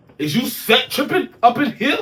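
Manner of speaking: intense, punched-out delivery, loud and high-pitched. Copying how people say it on TV, intense TV-style delivery. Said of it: "I'm gonna say it with some intensity because that's how they say it on T V".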